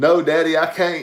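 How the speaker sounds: put-on Southern country accent. Imitating the other speaker's son, a country boy: Ty's country accent. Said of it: "I can hear him now".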